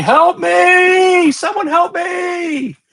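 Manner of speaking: very high, slow, drawn-out screams, "me" stretched. Narrating the game, the speaker voices a trapped woman screaming for help. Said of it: "she just starts screaming".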